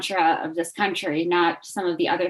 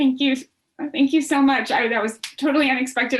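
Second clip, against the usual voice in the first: talking through tears, tearful and crying; 7 semitones higher than usual. Thanking the others after being congratulated on an award, crying while talking. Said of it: "I'm sorry for crying".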